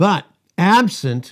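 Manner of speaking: loud, very sarcastic, boastful tone. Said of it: "he very sarcastically said to them".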